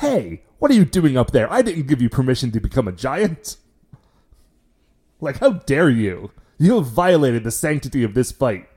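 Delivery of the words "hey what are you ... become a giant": put-on incredulous voice. Retelling a character's reaction to a giant monster: imitating an incredulous character. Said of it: "he gets really incredulous about it".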